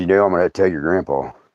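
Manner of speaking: dead-serious, stern, very low voice. Retelling what he said after turning back around, imitating him all serious. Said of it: "And he's like, all serious".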